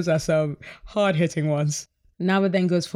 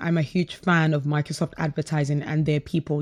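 ordinary talk, nothing marked

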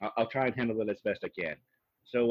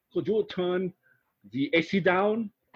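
convincing, high put-on Austrian accent; 7 semitones higher, 3 dB louder than usual. Recapping a TV show, quoting the Austrian guy asking Jax something, in an Austrian accent. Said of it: "That was a good Austrian accent".

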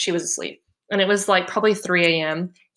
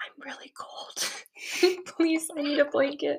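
breathy whisper, barely voiced; 8 semitones higher, 8 dB quieter than usual. Retelling what they whispered into a baby monitor, whispering. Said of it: "I was like whispering this".

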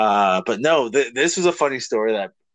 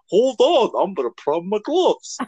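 squeaky, very high-pitched, unflattering put-on voice; 10 semitones higher than usual. Retelling what Brett said about a barking dog: Brett impression. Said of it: "he's gonna hate this impression".

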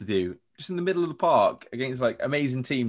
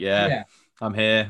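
put-on nonchalant, casual voice; 3 dB louder than usual. Imitating a footballer on the pitch: imitating a nonchalant player. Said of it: "Just so nonchalant".

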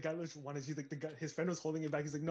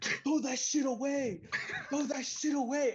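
very high, loud, shrill, drawn-out bellowed yell; 10 semitones higher, 5 dB louder than usual. Retelling a bouncer shouting at people in line: imitating a bouncer yelling. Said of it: "the bouncer just starts yelling".

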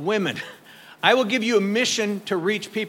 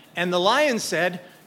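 usual speaking voice

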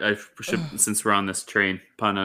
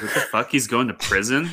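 usual speaking voice

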